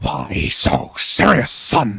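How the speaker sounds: very slow, creaky, rough, dragged-out drawl. Showing another player a Joker impression from the film. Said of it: "a reasonable Heath Ledger Joker".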